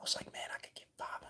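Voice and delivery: very quiet, breathy whispered inner voice. Retelling own past thoughts about a daily money plan, whispering. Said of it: "I don't know why I'm whispering".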